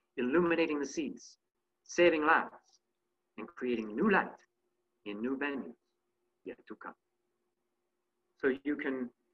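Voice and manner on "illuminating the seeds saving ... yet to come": put-on French accent. Showing a historical portrayal with a regional accent: French accent as Augustin Jean Fresnel. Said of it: "you get that French accent going".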